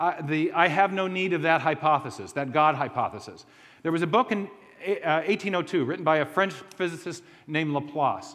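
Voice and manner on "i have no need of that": ordinary delivery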